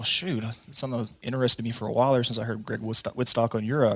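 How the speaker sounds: usual speaking voice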